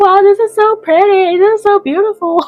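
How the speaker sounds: speaking as if crying. Retelling admiring the view while crying: retelling words said crying. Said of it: "as I'm crying and I'm crying and I'm like".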